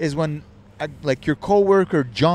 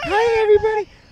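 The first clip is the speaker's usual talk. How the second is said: put-on very high-pitched small child voice. Telling a friend about her sister's child, imitating a child's voice. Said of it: "her sister had like a child".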